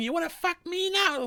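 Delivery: mock very high-pitched, shrill screaming. Retelling a movie scene where the sister comes in: imitating someone screaming. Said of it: "the sister comes in and starts screaming".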